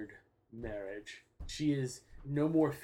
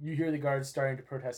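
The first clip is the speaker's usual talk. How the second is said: plain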